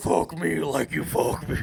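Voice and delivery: put-on very deep voice. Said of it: "the deep voice".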